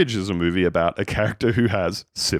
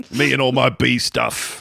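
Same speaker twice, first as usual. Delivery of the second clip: put-on mixed American-British accent, higher pitch; 5 semitones higher than usual. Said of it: "trying to do an American accent and trying to do a British accent".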